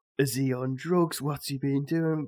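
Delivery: play-acted furious, high, drawn-out angry scolding. Retelling being woken by a friend's mum: imitating a mum shouting. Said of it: "his mum shouting at me".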